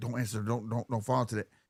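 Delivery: soft, hushed half-whisper under the breath. Retelling how a dad quietly warned his son during an interview: imitating a half-whisper. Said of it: "whispering to him".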